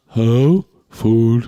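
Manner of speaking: silly, dim-witted dog voice. Friends voicing how a dog would talk, in a dumb dog voice. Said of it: "Your dog has a dumb voice for sure".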